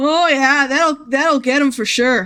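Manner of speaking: put-on Irish accent, pitched a touch high. Voicing a game character, the speaker tries a Patrick Warburton impression that comes out too Irish. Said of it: "that's too Irish".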